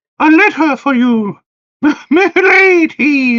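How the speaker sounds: strange hooting put-on voice, very high. Speaker voices a talking letter for a player, weird hooty voice. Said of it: "In a weird hooty voice".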